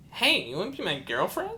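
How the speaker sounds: put-on squeakiest, high-pitched little kid voice. Recalling walking up and tapping the listener's shoulder; squeakiest prepubescent voice. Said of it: "in the squeakiest prepubescent voice I could".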